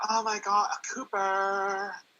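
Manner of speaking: put-on valley-girl accent. Explaining a term to a co-speaker, demonstrating a valley girl drawl. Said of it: "they say like valley drawl".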